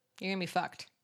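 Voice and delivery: put-on harsh, blunt tone. Retelling how a character delivered a grim vision: imitating a harsh blunt tone. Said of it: "didn't really say it with, like, a gentle tone".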